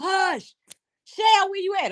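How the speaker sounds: very high shrieking scream. Retelling watching a video, imitating her own screaming at the phone. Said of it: "I'm screaming for Shell".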